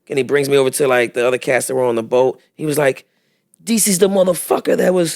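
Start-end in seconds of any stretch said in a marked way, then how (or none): 3.6-5.1 put-on French accent, higher-pitched. Retelling what a man on the beach said about him: french accent. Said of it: "I still got the French accent".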